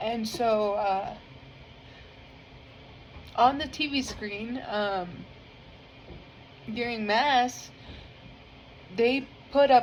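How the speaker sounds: trying not to cry, holding back tears. Speaker describing a church service, holding back tears. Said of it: "sorry, I'm trying not to cry".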